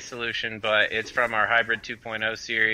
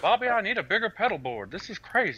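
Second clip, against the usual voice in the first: high cartoon character voice, pitch swooping widely; 10 semitones higher than usual. Among co-hosts, a speaker answers a Hank Hill remark in that voice: Hank Hill impression. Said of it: "that's not bad".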